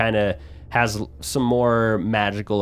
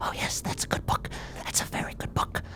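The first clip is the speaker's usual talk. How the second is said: soft, breathy, barely voiced whisper. Imitating a hunched-over guy who always whispers when he talks, whispering. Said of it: "he always like talks and whispers. He's like".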